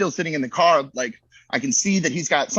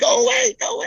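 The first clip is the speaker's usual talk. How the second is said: very high-pitched voice, pitched way up; 3 dB louder than usual. Retelling freezing up behind a wall holding a gun: high-pitched voice. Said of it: "It's really like high pitched".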